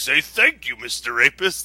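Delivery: imitated gravelly voice. Recounting a strange story, voicing the guy, imitating a gravelly voice. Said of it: "The guy talks in like this really gravelly voice".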